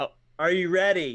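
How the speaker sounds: speaking loudly. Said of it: "you're so loud".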